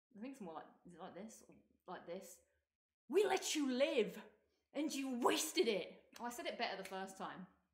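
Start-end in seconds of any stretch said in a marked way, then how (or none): 3.1-6.0 very intense delivery, slow and loud, leaning hard. Speaker tries out how Abby says her line to Ellie, imitating Abby, very intense. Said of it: "very intense".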